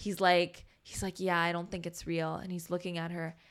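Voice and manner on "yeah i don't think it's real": quiet, hushed half-whispered aside. Retelling a quiet reply to the kid: imitating a half-whisper. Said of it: "we're, like, whispering".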